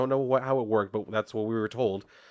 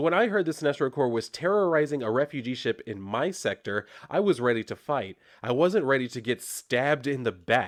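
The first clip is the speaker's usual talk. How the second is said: plain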